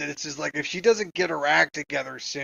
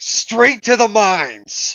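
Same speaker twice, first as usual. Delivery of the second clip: put-on angry commanding voice, higher and louder; 5 semitones higher, 10 dB louder than usual. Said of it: "she looks at them with a very angry face and she's pointing".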